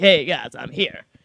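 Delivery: swaggering Western hero voice, deep and macho. Speaker acting out a highwayman hero arriving with his guns: deep macho Reish Lakish voice. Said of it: "Nice deep voice".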